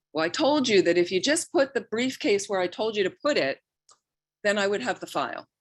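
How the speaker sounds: mock irritated, sharp, scolding angry snap. Retelling a friend's husband snapping at her over a lost file: imitating someone snapping angrily. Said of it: "he suddenly snaps at her".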